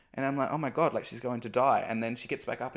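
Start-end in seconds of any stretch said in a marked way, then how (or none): 0.6-1.9 mock frightened, alarmed, panicked inner voice. Retelling watching a friend collapse: imitating own past panic. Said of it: "I'm panicking".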